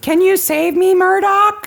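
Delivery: very high, eerie pull-string doll voice. Quoting a pull-string doll's line while describing it, creepy talking doll voice. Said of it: "And it has a creepy voice".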